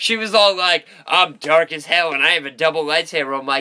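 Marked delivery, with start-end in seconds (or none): none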